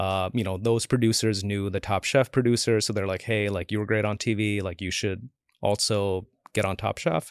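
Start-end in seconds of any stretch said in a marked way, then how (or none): none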